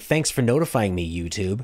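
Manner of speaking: ordinary delivery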